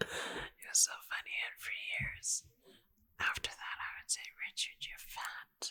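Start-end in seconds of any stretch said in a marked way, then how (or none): 4.5-5.7 put-on posh accent, quieter. Repeating an old joke for years, the speaker imitates a friend's wife's posh accent. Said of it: "you do my wife's accent so perfectly".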